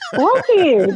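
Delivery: high-pitched voice. Challenged by another speaker about aborted kids, replying with voice going high. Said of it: "Now your voice got high".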